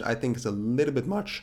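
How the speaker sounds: voice breaking on a word. Host reviewing a crypto project for viewers, voice cracking. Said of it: "Wow, voice crack".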